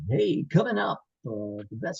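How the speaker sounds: generic radio announcer voice. Asked what to send on a demo tape, the speaker does a generic radio announcer voice. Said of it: "that's my generic radio guy".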